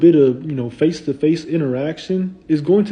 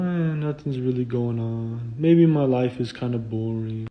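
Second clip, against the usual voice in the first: put-on flat monotone, quieter and lower; 4 semitones lower, 8 dB quieter than usual. Describing a dull FaceTime with a girl, imitating how she talks: flat monotone. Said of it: "she's kind of like just monotone".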